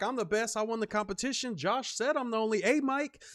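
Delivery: cocky, boastful bragging tone. Retelling how another streamer boasted about winning: imitating Ricky bragging. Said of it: "popping his shit, like".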